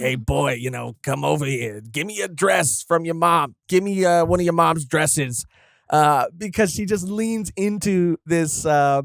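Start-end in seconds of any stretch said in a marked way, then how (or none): 0.0-5.5 over-the-top, put-on horror-villain smoker's voice. Speaker acts out a monstrous character from a story, in a smoker's voice. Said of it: "I imagine her having like a like a smoker's voice".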